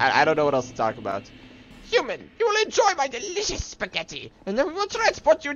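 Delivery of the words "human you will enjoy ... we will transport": character voice pitched way up. Trying to do Papyrus, addressing a human: Papyrus voice. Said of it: "let's see if I can do papyrus".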